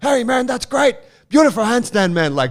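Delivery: calling out, very high, very loud, booming, shrill. Retelling how a man called out to him during his handstands, imitating someone yelling. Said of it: "Wim starts yelling out".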